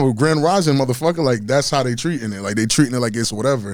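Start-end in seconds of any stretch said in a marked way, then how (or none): none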